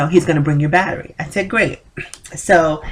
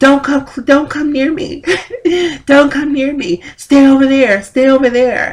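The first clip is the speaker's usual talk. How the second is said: mock screaming, pitched much higher; 8 semitones higher, 5 dB louder than usual. Speaker retells a man screaming as they came closer to the gate, imitating someone screaming. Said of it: "he starts screaming".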